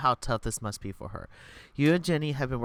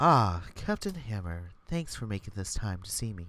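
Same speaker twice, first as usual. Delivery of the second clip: low voice with smarm laid on; 4 semitones lower than usual. The narrator voices Rexford greeting Captain Hammer, smarmy Rexford voice. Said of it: "He's so smarmy".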